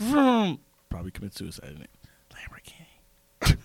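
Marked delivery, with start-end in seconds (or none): 2.3-3.6 whispering, quieter. Acting out the tagline at the end of a car commercial, whispering. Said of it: "Just has to end in a whisper".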